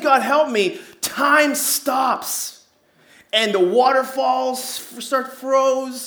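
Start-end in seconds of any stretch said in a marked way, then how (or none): 0.0-0.8 put-on screaming, acted out. Telling a story, acting out a falling man screaming to god: retelling a scream. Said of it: "and as he screams".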